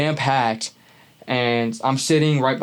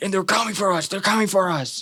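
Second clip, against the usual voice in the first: put-on wild, raving man's high, frantic yell; 7 semitones higher than usual. Retelling a man next to her on MARTA, retelling a man's yelling. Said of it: "he's just yelling the whole time".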